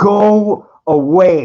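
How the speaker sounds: loud, hard, intense delivery. Showing how to tell someone to go away, with serious intensity. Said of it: "with some serious intensity".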